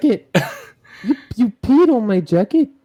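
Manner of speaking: high-pitched put-on Welsh accent. Retelling how someone did a welsh accent, repeating the line: imitating a welsh accent. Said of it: "how did the the accent go?".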